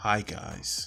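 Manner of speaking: put-on soft flat voice. Mocking creators who talk close to the camera: mock soft monotone. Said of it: "in a soft monotone".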